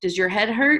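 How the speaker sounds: ordinary delivery, nothing marked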